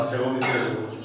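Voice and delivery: low, soft, crying, tearful pleading. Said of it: "eu comecei a chorar e gritar".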